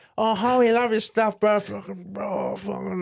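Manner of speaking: very high, put-on hillbilly voice. Speaker quotes a big fan telling him he loves his stuff; imitating a hillbilly fan. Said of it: "he's like a hillbilly vampire dude".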